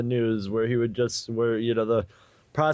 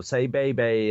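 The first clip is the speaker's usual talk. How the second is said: Southern, Tennessee-style way of talking. Speaker retells a faith healer speaking into a deaf person's ear: southern way of talking. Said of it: "very, you know, southern way of talking".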